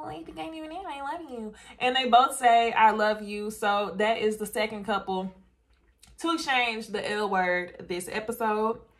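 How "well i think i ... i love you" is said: put-on baby voice, higher and quieter. Recapping a show episode, quoting one cast member to another, Brianna's little baby voice. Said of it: "in her little baby voice".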